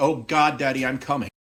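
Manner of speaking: screaming in angelic voice. Reading out a line from the game: angelic voice screaming. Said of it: "Angelic voice screaming".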